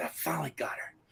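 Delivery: soft, unvoiced, gloating whisper.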